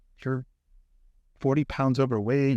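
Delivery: ordinary talk, nothing marked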